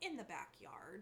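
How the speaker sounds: mock dead-serious, matter-of-fact, completely unjoking delivery. Retelling a kindergartner's reply to a question: imitating a dead-serious child. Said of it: "completely serious".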